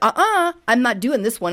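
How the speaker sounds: usual speaking voice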